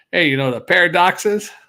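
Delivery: put-on New Jersey accent. Playing with a pun, the speaker says it in a New England or New Jersey accent. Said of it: "if you say paradox with a New England or New Jersey accent".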